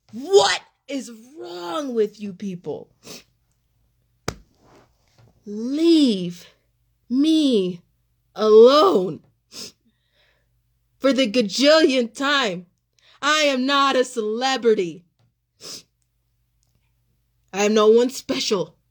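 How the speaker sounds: upset, irritated and crying. Speaker telling people to leave them alone, crying and irritated. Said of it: "I'm crying because I'm so fucking irritated".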